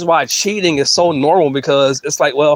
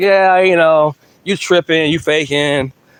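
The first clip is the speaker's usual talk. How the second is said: put-on nonchalant, casual tone. Retelling how the guy answered his crying girlfriend: imitating someone nonchalant. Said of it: "nonchalantly, just like".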